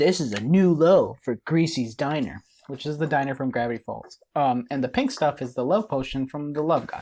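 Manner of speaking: plain reading voice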